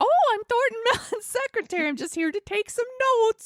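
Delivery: put-on very high voice with Midwestern accent. Retelling what a woman taking notes in a business class said, midwestern accent. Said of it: "she's got the Midwestern accent".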